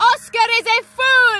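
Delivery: very high, loud yell, "fool" long and stretched. Told to yell anything that comes to mind while practicing a voice: shouting. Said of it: "Nice and loud".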